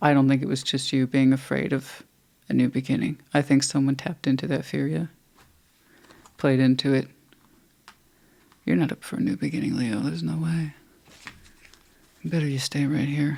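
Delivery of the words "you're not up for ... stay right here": mild, soft, seductive devil voice with dark undertone. Speaker voicing the devil speaking to leo, in a soft, seductive devil voice. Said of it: "That's my devil voice".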